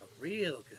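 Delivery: slightly sinister. Telling Nils that the doctor is a good thing: a little sinister. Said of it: "you sound a little sinister there".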